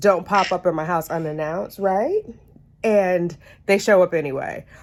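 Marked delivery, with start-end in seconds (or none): none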